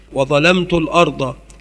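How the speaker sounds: ordinary talk, nothing marked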